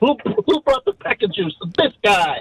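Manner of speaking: put-on shouted voice. Trying the line the others asked for: shouting in Chip impression. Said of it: "just shout out in your best Chip impression".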